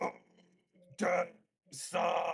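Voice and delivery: loud, rough, creaky, roaring monster voice. Narrating a scene, voicing the creature in the doorway in a monstrous voice. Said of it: "this monstrous voice go".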